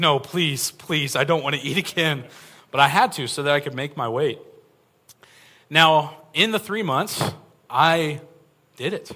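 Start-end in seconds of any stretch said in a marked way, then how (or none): 0.0-2.2 acted near-tearful, pleading voice. Retelling her reaction when the seventh eating alarm went off, retelling pleading near tears. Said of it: "I'm almost in tears".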